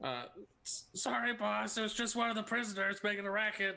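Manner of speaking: high, yelled goblin-creature voice. A tabletop player's character, shouting in her best hobgoblin voice. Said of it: "in her best hobgoblin voice".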